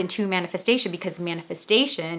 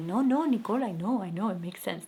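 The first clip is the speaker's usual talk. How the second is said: gentle put-on Cuban accent; 6 dB quieter than usual. Nicole retells her dad's reply to her; Cuban accent imitating her dad. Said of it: "That's my Cuban um, accent of my dad".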